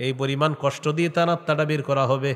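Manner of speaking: usual speaking voice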